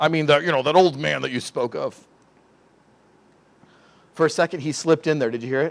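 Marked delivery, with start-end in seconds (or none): 0.0-2.0 very gruff character voice. Acting out Joseph questioning his brothers: gruff voice as Joseph. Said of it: "voice real gruff".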